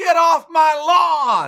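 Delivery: very high, drawn-out, furious scream at top of lungs. Retelling yelling at a little girl running through the front yard: imitating own scream. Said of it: "I screamed at the top of my lungs".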